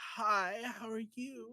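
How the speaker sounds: weird, very slow, high, drawn-out voice. Changing her character's voice to avoid being disrespectful; weird Jessica Rabbit voice. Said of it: "I just gave her like this weird Jessica Rabbit".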